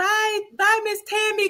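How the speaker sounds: very high, thrilled, excited. Retelling how she said goodbye to Tammy: imitating someone excited. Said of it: "she was just so excited".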